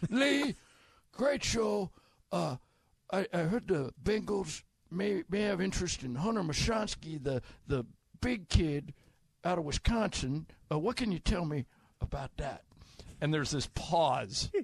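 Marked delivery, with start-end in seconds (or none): 0.0-12.6 put-on old man voice, quieter. Retelling a phone call to Hacksaw, disguising himself: old man voice. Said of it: "I go into my old man voice".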